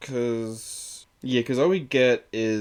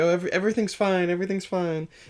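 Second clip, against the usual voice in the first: bright, pitched-up, forced fake cheer; 9 semitones higher than usual. Acting out Sansa pretending everything is fine, imitating her fake cheer. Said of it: "putting on this".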